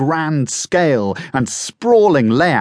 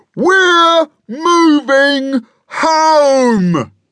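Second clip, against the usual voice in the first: very high, booming yell, "home" stretched; 5 dB louder than usual. Papa repeats his big news to his squabbling family: booming yell. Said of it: "he boomed".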